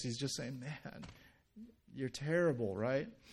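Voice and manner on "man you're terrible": mock teasing, much quieter. Narrator retelling how Rick made fun of Jim's present wrapping: retelling mocking teasing. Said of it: "making fun of the way his package looks".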